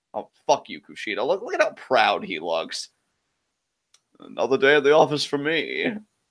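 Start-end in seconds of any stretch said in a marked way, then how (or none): 4.2-5.9 put-on laid-on posh British accent. Voicing a wrestler who looks proud: Kushida in a posh British accent. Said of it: "your Kushida accent is like a posh British accent".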